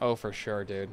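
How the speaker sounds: reluctant, unenthusiastic. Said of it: "the way I said that really didn't inspire confidence".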